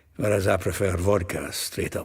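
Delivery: ordinary delivery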